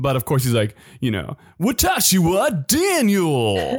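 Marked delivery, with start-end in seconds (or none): 1.6-3.8 cringy put-on anime foreigner voice, higher. Imitating an anime character who speaks Japanese perfectly: Daniel's cringy voice. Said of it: "that's how, what his voice is like".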